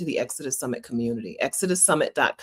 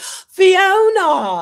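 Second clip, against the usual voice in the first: very high, drawn-out fake British accent; 11 dB louder than usual. Retelling meeting a British friend, greeting her in a fake British accent. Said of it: "a fake British accent".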